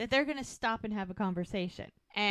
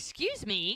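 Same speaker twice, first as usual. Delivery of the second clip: mock indignant, angry woman's voice. Retelling a woman's reaction when a man mentions plan b, imitating an indignant woman. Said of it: "And she gets pissed".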